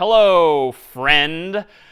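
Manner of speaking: slightly sarcastic tone. Showing an example greeting for a program to print: a little sarcastic. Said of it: "maybe I'm being a little sarcastic here".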